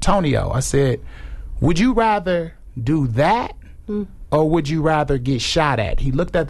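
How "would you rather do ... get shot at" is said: put-on joking, teasing tone. Speaker retells putting a question to a man, retelling a joking question. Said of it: "I caught it in a jokingly manner".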